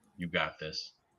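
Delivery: sly quiet voice.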